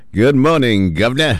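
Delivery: very high, hammy, cheesy, put-on British accent. A host opening his show greets the Governor in a cheesy British accent. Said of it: "That's my cheesy British accent".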